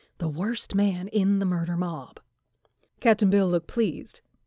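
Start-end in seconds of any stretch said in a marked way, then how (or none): 0.2-2.2 discreet, hushed whisper. A companion answers a man's question about a stranger, in a discreet whisper. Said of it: "lowered his voice to a discreet whisper".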